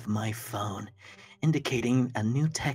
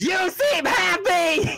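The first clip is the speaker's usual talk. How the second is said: passionate, emphatic, much higher and louder; 8 dB louder than usual. Coaching another performer to say a line with more passion, passionate and emphatic. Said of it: "More passion".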